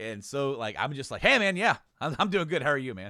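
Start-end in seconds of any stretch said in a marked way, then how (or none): 1.2-3.1 booming, loud, high, frazzled but relieved. Retelling own greeting before the first live show: imitating own stressed-out voice. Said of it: "I was so stressed out and so relieved".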